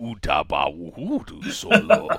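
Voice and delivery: low voice with pitch rolling around. Acting out a reply to being asked to eat something else at a buffet, Jabba the Hutt voice. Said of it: "every time I try to do the Jabba voice".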